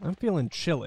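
ordinary talk

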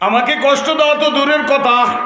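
high, loud calling out.

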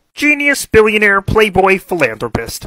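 put-on puppet frog voice. Acting an Avengers scene as Kermit the Frog: Kermit the Frog voice. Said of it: "Mickey Mouse and Kermit the Frog were in the Avengers".

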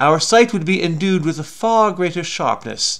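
put-on posh, cultured literary accent. Speaker reading a dictionary example sentence aloud, in an Alistair Cooke literary accent. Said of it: "That was my my literary accent".

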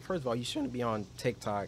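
voice cracking and breaking mid-line. Speaking to listeners about handling tiktok, voice cracking. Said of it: "my voice cracked".

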